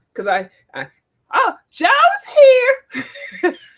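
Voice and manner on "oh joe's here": shrill, very loud, very high-pitched exclamation. Imitating Miss Beth announcing Joe: Miss Beth's voice. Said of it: "I can do Miss Beth's voice better".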